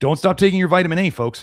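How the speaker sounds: dry sarcastic tone. Reading a study aloud, then adding an aside: sarcastic mock advice. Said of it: "that was sarcasm".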